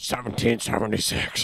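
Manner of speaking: put-on raspy ranting voice. Doing a quick impression for the others: Alex Jones impression. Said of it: "I had to do the Alex Jones".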